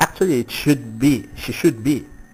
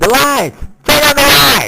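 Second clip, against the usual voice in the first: very high, loud, screeching scream; 13 semitones higher, 7 dB louder than usual. Retelling how the original film's actress reacts: imitating someone screaming. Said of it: "and just screaming".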